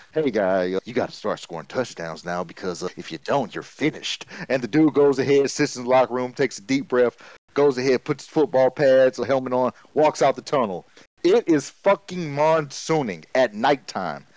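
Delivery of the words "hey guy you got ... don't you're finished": feeble, very low, soft weak voice. Telling a story, quoting a guy threatening a player at halftime: retelling a least intimidating threat. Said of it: "with the most least intimidating voice threat ever".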